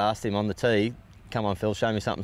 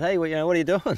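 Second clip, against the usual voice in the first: mock yelling, high, with voice raised; 8 semitones higher than usual. Retelling another player's reaction on the practice putting green: imitating someone yelling. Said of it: "he's yelling out".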